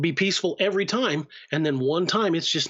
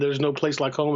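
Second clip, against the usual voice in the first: ordinary talk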